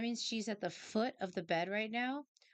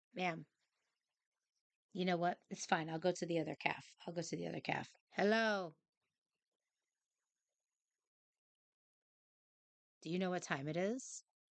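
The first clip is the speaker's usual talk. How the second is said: put-on voice of a talking cat. Retelling how the cat claws her for treats: voicing her cat Starburst. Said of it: "she pauses and she's like".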